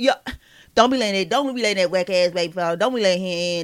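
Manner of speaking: offhand, casual, tossed-off delivery. Imitating how Kim Kardashian talks behind closed doors. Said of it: "That's how she talk".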